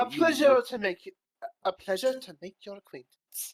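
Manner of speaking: tentative attempted Irish accent. Role-play: a character answers an introduction to a pupil, in Irish accent. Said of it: "I really hope I'm doing the accent right. It's supposed to be like Irish".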